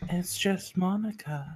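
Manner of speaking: put-on high, slow girl voice. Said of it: "I didn't know [name] could do a girl voice".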